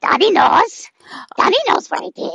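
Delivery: high, fast monster voice. Voicing a little robot mutant monster character: Gollum-style creature voice. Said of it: "That voice".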